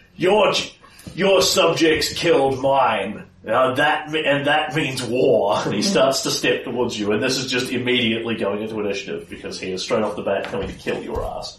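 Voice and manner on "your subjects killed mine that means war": very slow, drawn-out, booming bellow. Game master voicing a foe who confronts King Kaelin: bellowing. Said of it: "And bellows out".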